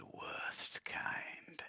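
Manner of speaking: hushed, breathy whisper. Narrating a game scene, the storyteller gives a character's whispered reply, whispering. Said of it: "He whispers back".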